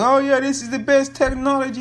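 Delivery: high, gushing voice of a raving fan. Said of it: "everybody was like".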